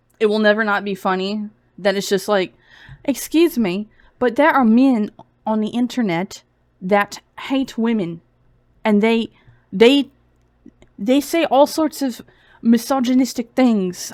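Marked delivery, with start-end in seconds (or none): 3.1-14.1 put-on British accent. Mocking online claims to viewers, slipping into a british accent. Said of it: "That was like that was a Brit that wants some brekkie".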